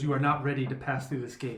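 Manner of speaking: disembodied voice, seeming to come from nowhere. Voicing a disembodied voice that stops players at a gate: disembodied voice. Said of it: "the disembodied voice".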